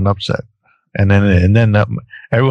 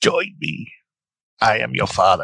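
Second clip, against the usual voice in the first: soft-spoken, hushed emperor voice; 5 dB quieter than usual. After failing at Yoda, attempting a quote in the Emperor voice. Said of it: "I'm doing the Emperor".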